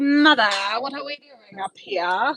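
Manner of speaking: lazy, unbothered talking rabbit voice. Petting a lazy rabbit and voicing what he says: voicing a lazy rabbit. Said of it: "He's like".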